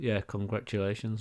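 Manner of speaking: offhand, casual. Narrating a game, voicing a voice the players hear: nonchalant. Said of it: "Just a really nonchalant thing".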